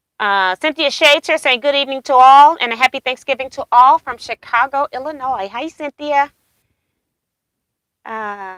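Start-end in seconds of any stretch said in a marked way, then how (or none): none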